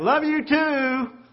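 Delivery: very loud, shrill, high, booming yell. Describing how his family answers people calling from the street, retelling a yell back. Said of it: "We yell back".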